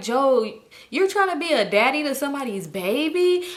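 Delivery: acted, high, tearful, stretched babyish crying voice. The speaker retells confronting Joe, retelling crying. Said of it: "I start crying".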